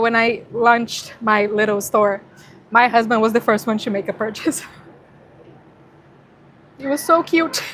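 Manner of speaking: tearful, teary voice while crying. Speaker sharing a personal story about her little store, crying while talking. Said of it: "I don't know why I'm crying".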